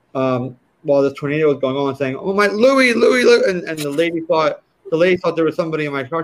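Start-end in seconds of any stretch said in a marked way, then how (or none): 2.1-3.4 mock very high, drawn-out screaming wail. Retelling losing luggage in a tornado: imitating own screaming. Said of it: "I was screaming".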